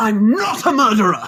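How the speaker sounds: mock very high, drawn-out petulant outburst. Retelling a favorite line from the episode, imitating Rishi's petulant outburst. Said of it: "I'm going to pull my mic away from my face".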